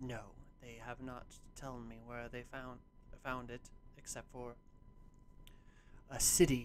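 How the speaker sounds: soft, close whisper. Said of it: "he'll whisper something into her ear".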